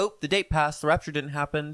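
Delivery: ordinary talk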